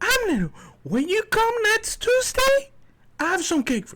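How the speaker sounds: motherly voice, pitched very high. Telling how his mom ordered a cake and called him, imitating mom's high-pitched voice. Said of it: "She has a very high pitched voice".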